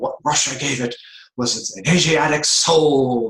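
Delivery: loud, high preaching voice, "soul" drawn out. Quoting a point Fulton J. Sheen made: Fulton Sheen dramatic preaching voice. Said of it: "in his very dramatic preaching style".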